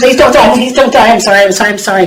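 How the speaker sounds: play-acted frantic, desperate, fast, panicked screaming. Retelling a mother bleeding after a fight: retelling a panicked scream.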